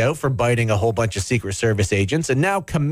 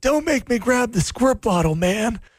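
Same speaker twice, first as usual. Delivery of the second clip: put-on old politician voice, pitched higher; 9 semitones higher than usual. Joking about the president's dog biting staff: Joe Biden scolding his dog. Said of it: "your impression of Joe Biden scolding his dog".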